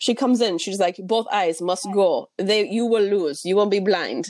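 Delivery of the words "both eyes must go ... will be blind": English spoken in a put-on Russian accent. Retelling what a doctor in a book said: imitating a russian accent. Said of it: "sorry for my accent".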